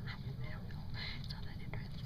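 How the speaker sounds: soft, unvoiced whisper.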